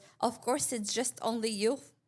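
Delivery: put-on Albanian English accent. Retelling a woman's reply to the group, in her Albanian English accent. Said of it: "in her like Albanian English accent".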